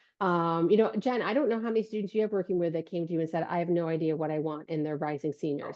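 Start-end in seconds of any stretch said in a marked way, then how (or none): none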